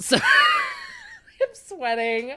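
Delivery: high, wide-open laughing fit.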